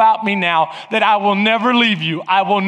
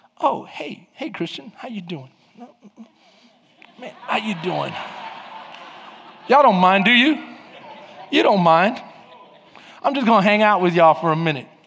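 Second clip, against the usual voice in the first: put-on smooth, sneaky voice; 3 dB quieter than usual. Acting out the enemy joining a couple's table: playing a smooth intruder. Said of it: "this is what he does. He's like".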